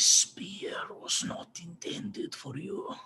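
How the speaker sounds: hushed, breathy, whispered creature voice. Narrating a game, the speaker voices a creature heard in a player's head: creature voice. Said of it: "the voice of some creature as it says".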